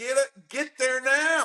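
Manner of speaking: mock, very high-pitched, frantic screaming. Recalling screaming at drivers from the golf course, retelling a scream. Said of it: "I'd be screaming on the golf course".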